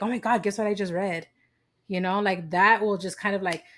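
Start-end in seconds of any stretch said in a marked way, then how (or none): 0.0-1.3 acted excited voice. Retelling how the other speaker shares what they just read: imitating someone excited. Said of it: "all excited".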